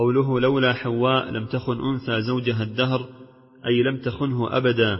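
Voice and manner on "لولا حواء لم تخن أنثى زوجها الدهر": plain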